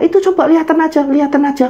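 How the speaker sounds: put-on very high-pitched elderly grandmother voice. Telling a story, voicing the grandmother on a phone call, old granny voice. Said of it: "suara nenek ini".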